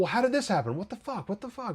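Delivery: put-on furious blurt. Retelling a character's reaction to bad news: imitating someone angry. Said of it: "he is mad, clearly".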